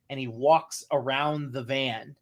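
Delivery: normal talking voice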